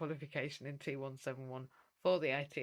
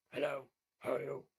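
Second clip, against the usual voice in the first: rough, very gruff smoker's voice. Recalling the smoking maths teacher who came every week, imitating Paula's gruff voice. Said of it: "very very gruff voice".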